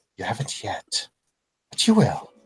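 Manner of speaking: very quiet, hushed, close-up voice. Game narrator voicing a character who teleports in front of the player, very, very quiet. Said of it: "says very, very quietly".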